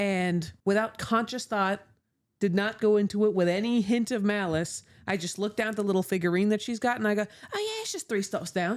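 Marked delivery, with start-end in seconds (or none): 7.2-8.8 put-on soft, sing-song British accent. Retelling answering a British woman on a platform, switching into a British accent. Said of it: "I'm switching up into British".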